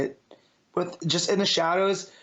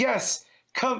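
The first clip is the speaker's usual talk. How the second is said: put-on maniac yell, higher pitch; 6 semitones higher than usual. Imagining Azrael in a standoff with his flaming sword: Azrael voice, put-on maniacal yelling. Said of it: "talking like a maniac, like just yelling".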